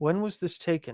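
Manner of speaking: discreet, low-key, private, confidential tone. As Desric, standing next to Illy, speaking to Aaron in a hushed tone. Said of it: "but in a more hushed tone".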